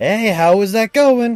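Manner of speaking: put-on yelling voice. Voicing Miss Fortune during a tense fight scene: yelling as Miss Fortune. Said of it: "you just hear Miss Fortune yell".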